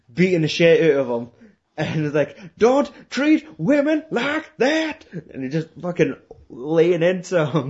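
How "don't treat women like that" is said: thick, slow Alabama drawl, very high-pitched. Retelling a film scene where Nicolas Cage beats someone up: Nicolas Cage thick Alabama accent. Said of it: "this fucking thick Alabama accent".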